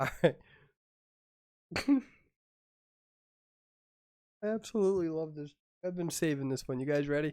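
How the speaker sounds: talking through laughter. Trying to tell a dad joke, laughing while talking. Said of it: "I am crying".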